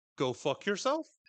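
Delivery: pitch rising at the end on yourself. Recapping a character's reply to criticism, questioning rising tone. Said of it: "I love the implied question".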